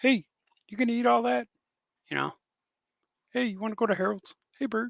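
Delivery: high puppet voice. Speaker channels Ernie and calls to Bert: Ernie voice. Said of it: "it's my Ernie".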